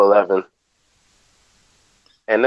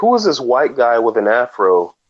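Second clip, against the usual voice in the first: ordinary talk, nothing marked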